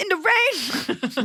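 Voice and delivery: very high, poorly done woman's voice. Retelling an argument about taking the baby outside, the speaker does a bad impression of Myrna. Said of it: "This impression is so bad".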